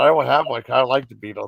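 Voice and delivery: ordinary talk, nothing marked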